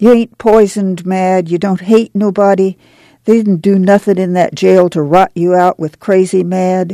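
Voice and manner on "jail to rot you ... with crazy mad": ordinary delivery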